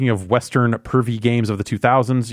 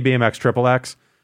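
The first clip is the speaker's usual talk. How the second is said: normal talking voice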